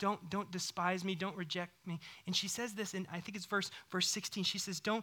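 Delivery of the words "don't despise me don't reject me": acted humble, pleading tone. Speaker retelling Hannah's words to her Lord, retelling a humble plea. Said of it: "it's like in all humility".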